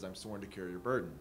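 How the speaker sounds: ordinary talk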